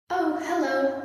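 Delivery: loud, high-pitched, cheery calling-out voice. Spotting giants crawling through a caved-in roof, a character greets them loudly. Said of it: "Opal said loudly".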